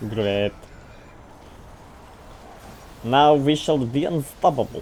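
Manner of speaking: slow, put-on Russian accent. Cheering a teammate's purchase in a game: put-on Russian accent. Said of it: "how's my Russian accent?".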